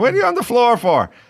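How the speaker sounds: put-on German accent, pitched very high. Telling a story, speaker acts out a guy's mom Irene walking in: Irene's German accent. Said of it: "With her German accent".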